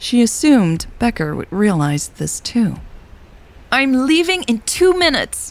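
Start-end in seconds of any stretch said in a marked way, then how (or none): 3.7-5.5 very high-pitched shout. Narrator reading a woman calling to a man as a storm approaches, yelling. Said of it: "Elle yelled".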